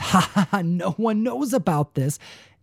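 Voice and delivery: dismissive scoffing chuckle. Retelling how a man reacted when asked about a card, acting out a scoff. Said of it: "he scoffed and goes".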